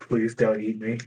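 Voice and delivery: muttered whisper. Narrating the game, voicing Stiggs's line, whispering to himself. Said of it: "Stiggs is just whispering to himself".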